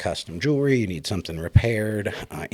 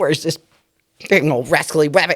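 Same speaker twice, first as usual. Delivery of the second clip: loud, very high-pitched cartoon holler; 8 semitones higher, 8 dB louder than usual. Retelling him out there with the gun: Elmer Fudd voice. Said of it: "him as Elmer Fudd".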